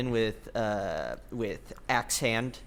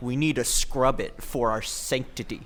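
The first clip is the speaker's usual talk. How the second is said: usual speaking voice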